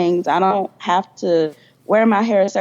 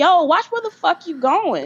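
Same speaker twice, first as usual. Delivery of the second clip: heated, angry yelling, pitched up; 10 semitones higher than usual. Retelling own reaction when someone stepped on a new shoe: imitating own angry retort. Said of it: "I got so mad".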